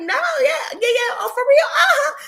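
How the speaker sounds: mock very high, breezy, playful rapid chatter. Retelling own replies in what seemed a friendly chat: retelling own playful reply. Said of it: "we're having a playful conversation".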